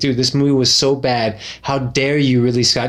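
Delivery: plain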